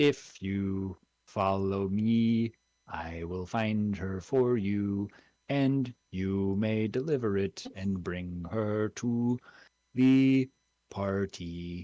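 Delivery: large bee creature voice. Narrating, voicing a pony-sized bumblebee speaking telepathically to the group: telepathic bumblebee creature voice. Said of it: "telepathically in all of your heads you hear".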